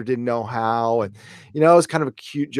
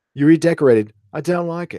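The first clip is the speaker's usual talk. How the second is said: clumsy put-on British accent, pitched up; 5 semitones higher, 3 dB louder than usual. Voicing someone's lines in the speaker's own bad British accent. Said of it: "it's my bad British accent".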